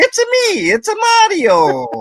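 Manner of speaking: very high, swooping, sing-song comic voice. While talking about tortoises, the speaker tries his best voice: Mario voice. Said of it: "all I have is Mario to go off of".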